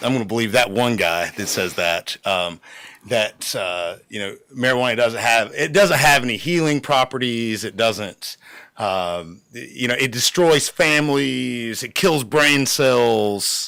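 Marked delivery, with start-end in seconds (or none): none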